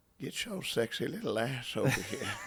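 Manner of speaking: put-on soft, sleazy, creepy old man voice. After being told he sounds like a creepy old man: creepy old man from Family Guy voice. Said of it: "you just sound like that creepy old man".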